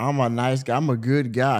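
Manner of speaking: usual speaking voice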